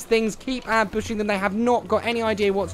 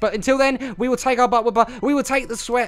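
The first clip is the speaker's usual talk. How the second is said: very fast, rushed, rattled-off delivery; 2 semitones higher, 3 dB louder than usual. Signing off to viewers mid-game, speaking very fast. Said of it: "I can't believe I'm speaking so fast".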